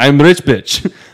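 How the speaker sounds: put-on heavy Russian accent. Retelling a conversation with a woman who asked what the speaker does, strong Russian accent. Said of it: "very strong Russian accent".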